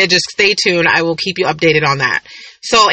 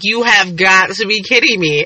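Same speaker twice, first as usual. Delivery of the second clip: put-on tearful, crying disbelief; 2 semitones higher than usual. Retelling seeing a first gray hair in the mirror: imitating own crying. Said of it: "So I'm crying".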